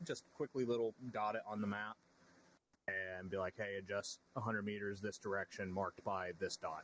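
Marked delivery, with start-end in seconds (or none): none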